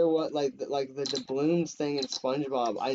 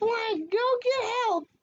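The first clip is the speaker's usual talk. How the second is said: very high-pitched, squeaky voice. Retelling a remembered scene, imitating Johnny saying a line. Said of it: "that was a very good impression".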